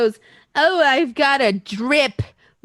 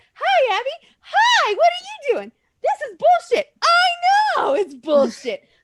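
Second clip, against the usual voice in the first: very high, animated, swooping puppet voice; 13 semitones higher than usual. Imagining working a puppet from behind and talking for it: puppet voice. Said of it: "I'll talk for you".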